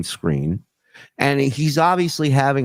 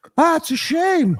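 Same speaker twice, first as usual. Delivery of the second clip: put-on mouth-full voice, higher pitch. Imitating High Pitch eating a hero sandwich: imitating High Pitch eating. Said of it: "High Pitch eating a fucking hero going".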